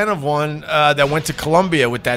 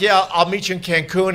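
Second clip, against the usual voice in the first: ordinary talk, nothing marked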